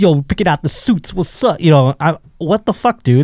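mocking slangy voice. Friends picking out suits; the speaker mimics how a man talks, mocking his slangy talk. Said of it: "That's not how he talks. He's like".

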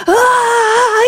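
very high, drawn-out panicked scream of ah. Recounting an intimate moment, acting out the man: imitating a panicked scream. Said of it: "he's screaming".

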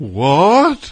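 high, loud astonished gasp. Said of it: "people were like".

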